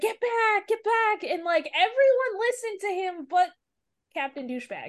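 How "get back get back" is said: high, urgent, screamed voice. Speaker recounting how a man got everyone to move, retelling a scream. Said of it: "when he was like um screaming like".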